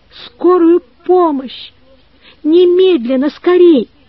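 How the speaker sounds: high, tearful shout through crying. A mother grabs the phone and calls for an ambulance: crying shout. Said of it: "крикнула плачущим голосом".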